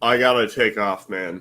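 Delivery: defeated, beaten tone in the voice. Five hours into a stream, a teammate says they have to leave, sounding defeated. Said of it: "I can just hear the defeat in your".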